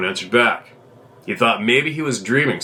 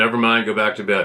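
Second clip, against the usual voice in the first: usual speaking voice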